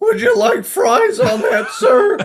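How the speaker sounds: very high and loud, swooping pitch. Joking after a voice slip, doing the nerdy fry cook from The Simpsons. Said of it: "I sound like that fucking, uh, nerdy, uh, fry cook from The Simpsons".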